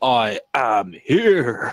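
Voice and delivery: loud, throaty, guttural growl. Reading out a viewer's chat line the way they want: guttural voice. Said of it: "it's, like, a guttural thing".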